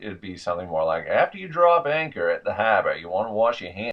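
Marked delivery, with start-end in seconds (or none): 1.1-3.9 native Maine accent. Demonstrating regional speech, the speaker repeats a phrase in a native Maine accent. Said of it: "Give you the native Maine accent".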